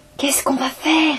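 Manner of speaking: muffled whisper. Narrator voicing a companion after the incantation brings someone back, muffled whisper. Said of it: "demanda Sari dans un murmure étouffé".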